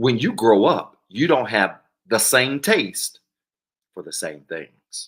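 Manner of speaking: slow, loud, deliberate, word by word. A speaker repeats a point to the audience, said slow. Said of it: "Let me say that slow".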